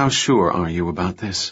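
plain

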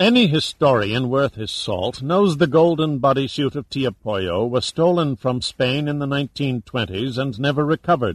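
plain reading voice

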